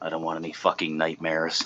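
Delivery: hushed, under-the-breath stage whisper. Repeating an earlier aside to the group: retelling a half-whisper. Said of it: "and then I whispered".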